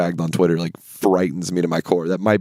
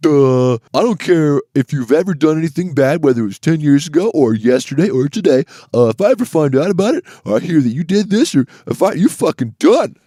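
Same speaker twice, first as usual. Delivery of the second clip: very high, loud, pushed comic character voice; 9 semitones higher, 6 dB louder than usual. Retelling a stand-up bit with two impressions: retelling Dave Chappelle's Trump impression. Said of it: "his second impression is".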